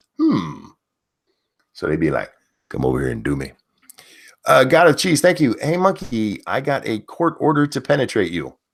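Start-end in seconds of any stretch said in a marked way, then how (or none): 2.7-3.5 very low, husky, seductive voice. Demonstrating how women talk to men they desire, in a huskier voice. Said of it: "drop to, into a huskier version of their voice".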